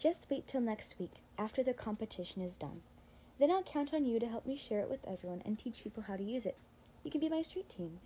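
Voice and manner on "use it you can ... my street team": ordinary delivery, nothing marked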